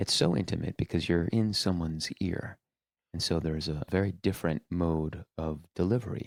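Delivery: soft podcast voice. Showing a host the delivery learned for podcasting, intimate podcast voice. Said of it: "this is my podcast voice".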